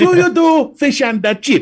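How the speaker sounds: very high, fake foreign accent on English. Imitating tourists speaking english abroad: mock foreign accent in english. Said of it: "in English, but in a foreign accent".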